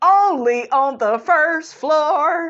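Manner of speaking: high, slow, sassy delivery. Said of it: "I was like".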